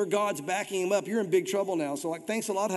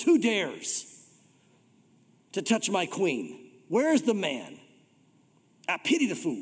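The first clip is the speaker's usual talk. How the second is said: play-acted, imperious, grand kingly voice with swooping pitch. Acting out the feared warrior king's outburst over his queen, booming king voice. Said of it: "probably booming voice".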